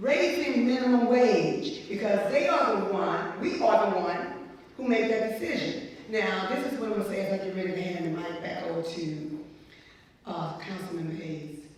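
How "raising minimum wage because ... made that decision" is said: usual speaking voice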